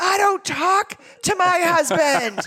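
high-pitched scream. Retelling what a client's wife said on the phone: imitating her screaming. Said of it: "she's screaming at me in the phone".

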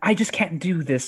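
ordinary delivery

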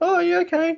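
very high put-on voice, casual and offhand. Retelling a wrestler agreeing to cover a shift: imitating Bushi's voice. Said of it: "That's how he sounds, I guess".

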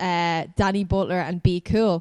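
ordinary talk

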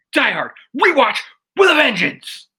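put-on voice, high pitch, swooping wildly. Saying the segment title again after being asked: Nick Cage voice. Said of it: "when you say it like Nick Cage".

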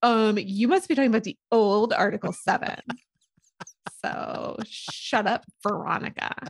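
put-on snide, catty mean-girl voice. Retelling a favourite moment from O'Neill, O'Neill's mean-girl voice. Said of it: "talks like a mean girl".

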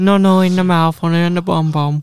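loud, high, wild put-on Spanish accent. Repeating the other speaker's line back: put-on Spanish accent. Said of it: "Why are they talking to a Spanish person in that mad accent?".

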